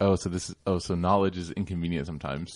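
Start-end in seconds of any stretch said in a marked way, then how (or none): none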